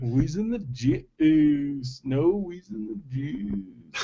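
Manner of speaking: slow, drawn-out comic celebrity impression voice. Trying an impression after being asked to: Pauly Shore impression. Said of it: "Do your best Pauly Shore right now".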